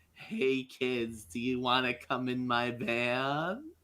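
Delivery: relaxed, coaxing, soothing tone, "van" drawn out. With creepy ice cream van music playing, calling out to kids, relaxing tone. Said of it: "try and convey a relaxing tone".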